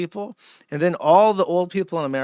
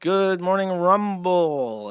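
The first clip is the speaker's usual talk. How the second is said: very slow, leisurely talk-show host voice, rumble drawn out; 3 semitones higher than usual. Pitching an early-morning stream for boomers, demonstrating a host talking very slowly. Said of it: "but you talk very slowly".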